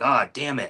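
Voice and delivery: put-on angry outburst, exclaimed. Retelling own reaction to words that made them angry: imitating own angry outburst. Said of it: "so those words just pissed me off".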